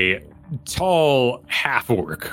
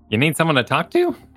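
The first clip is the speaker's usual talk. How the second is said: squeaky rat-man character voice; 6 semitones higher than usual. Voicing a rat man at a desk leaning over: rat man character voice. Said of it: "he goes".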